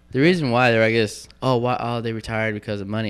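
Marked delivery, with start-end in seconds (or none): none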